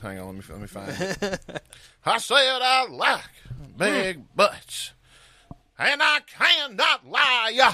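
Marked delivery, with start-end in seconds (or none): 2.0-7.7 put-on Southern preacher voice, much higher, slower. Speaker finds and tries out their Southern preacher voice: Southern preacher voice. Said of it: "this is my Southern preacher voice".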